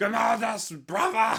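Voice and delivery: loud bellow, voice wrecked and shout-worn. Describing a character who keeps shouting at grimaldus, imitating his shout-racked voice. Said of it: "Such a shit voice".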